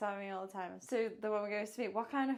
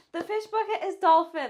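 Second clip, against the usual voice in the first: very loud, bright, dead-proud customer-service voice; 8 semitones higher, 13 dB louder than usual. Retelling telling a customer the fish: imitating own customer service voice. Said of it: "with my biggest, like, customer service".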